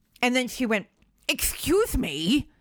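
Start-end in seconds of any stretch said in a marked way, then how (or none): 1.3-2.4 mock prim, very officious, bossy busybody tone. Retelling what a customer said to the speaker, imitating an officious tone. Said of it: "Like in this really officious tone".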